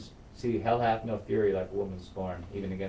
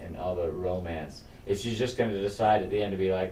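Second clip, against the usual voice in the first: plain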